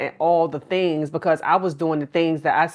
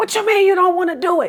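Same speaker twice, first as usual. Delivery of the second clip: mock shrill, very high, full-lung yelling; 14 semitones higher, 4 dB louder than usual. Retelling yelling at a child over math homework: imitating own past screaming. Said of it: "I'm screaming to the top of my lungs".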